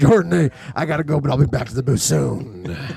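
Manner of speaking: put-on deep, booming voice. Describing a captivating speaker, imitating how he says goodbye, Darth Vader-like deep voice. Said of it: "It's like Darth Vader".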